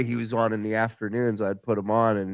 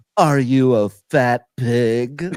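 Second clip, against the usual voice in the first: loud, slow, insulting tone, pig drawn out; 6 dB louder than usual. Retelling how Tom Leykis answered female callers: imitating Tom Leykis. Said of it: "And he'd be like".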